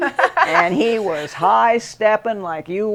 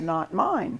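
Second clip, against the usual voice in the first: quiet, soft, understated murmur under the breath; 8 dB quieter than usual. Retelling how a friend answered a question: imitating someone saying it quietly. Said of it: "Ed very quietly said".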